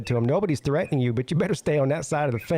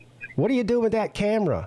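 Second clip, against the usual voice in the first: high-pitched mock old woman's voice, shouting; 7 semitones higher than usual. Retelling how an old woman came out at a passing car: imitating an old woman yelling. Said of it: "they're all out there yelling at him".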